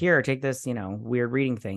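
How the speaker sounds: ordinary talk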